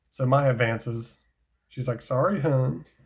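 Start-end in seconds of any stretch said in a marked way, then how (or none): 2.0-2.7 put-on country accent. Narrating a duel, the speaker voices a duelist turning down advances; country accent. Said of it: "I made her sound country".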